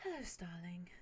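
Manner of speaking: prim, proper, very soft, polite and gently spoken. Retelling how a prim, proper woman greets someone, said very softly. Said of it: "she just very softly says".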